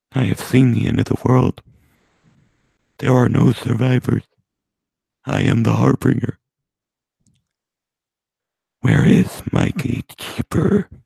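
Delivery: flat robotic monotone, spoken while inhaling. Showing how to talk while breathing in, the speaker does an inhaled Microsoft Sam voice. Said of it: "you just breathe in while you talk, and then you become Microsoft Sam".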